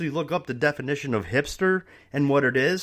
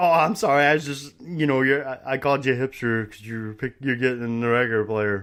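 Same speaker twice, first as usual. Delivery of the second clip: mock speech broken with chuckling. Retelling how a man apologized after calling the speaker a hipster, imitating a chuckling apology. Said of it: "So he's chuckling".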